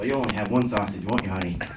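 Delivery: low, sly, snide tone. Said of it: "that snide remark at the end".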